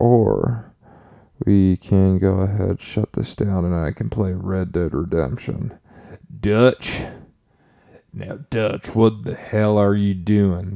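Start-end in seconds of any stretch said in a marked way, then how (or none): 6.4-10.8 botched attempt at a rough outlaw voice. Before playing Red Dead Redemption, the speaker does a horrible Arthur Morgan impression. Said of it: "That's a horrible Arthur Morgan impression".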